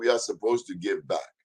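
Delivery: put-on West African English accent. Speaker retelling a woman's answer to his question, in a West African accent. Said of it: "That's my West African accent".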